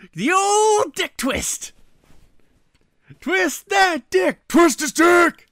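put-on shrill, high, drawn-out drunken hollering. Retelling a viral clip of a man at a fight: imitating a drunk guy yelling. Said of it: "the guy's just like".

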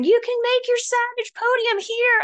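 play-acted very high, yelled, cheering shout. Recalling someone cheering them on at an obstacle, imitating Rachel shouting. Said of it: "And she's shouting".

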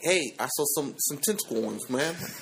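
thick put-on New York street accent. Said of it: "that's my New York accent".

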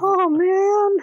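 stretched-out, very high cartoon voice. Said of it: "I can do Rick and Morty voices".

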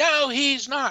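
put-on shrill, furious screaming, very high. Retelling a lady screaming back during a reading: imitating a woman screaming. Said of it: "She starts screaming at me".

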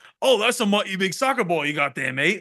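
put-on British accent. Retelling the drummer doing a British kid's accent back at him, imitating a British accent. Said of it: "he like does the accent back".

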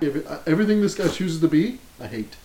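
ordinary delivery

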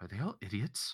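barely audible, very quiet, private whisper. Leaning over to speak into another character's ear, whispering. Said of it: "I whisper into his ear".

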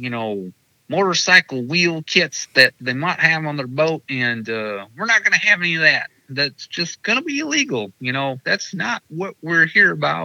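put-on very high, very loud Southern American accent. Retelling what Anthony said: Anthony impression, Southern accent. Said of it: "I'm going to do my Anthony impersonation. So any of your listeners with Southern accents will hate me for this".

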